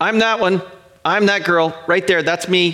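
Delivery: put-on small child's piping voice. Retelling a child piping up while the family watches Netflix, in a child's voice. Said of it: "I'll hear this child's voice pipe up and go".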